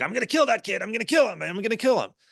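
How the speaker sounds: put-on enraged threatening yell, pitched very high. Speaker recalls a man on a bus shouting threats; retelling an angry shout. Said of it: "he's shouting like".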